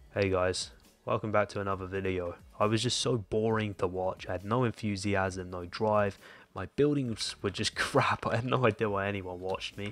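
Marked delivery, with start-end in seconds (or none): 0.2-2.4 put-on flat, robot-like monotone. YouTuber imitates the intro of his early videos, in a robotic monotone. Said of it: "I sounded like a robot".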